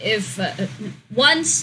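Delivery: ordinary delivery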